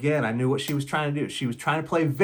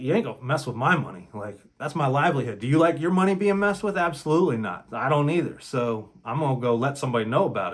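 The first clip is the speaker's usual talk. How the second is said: ordinary delivery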